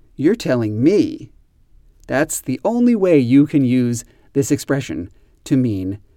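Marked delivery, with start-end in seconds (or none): 0.2-1.3 "me" hit hardest, weight on final word. Teaching an expression used to show surprise, stress on me. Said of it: "we always stress the word me".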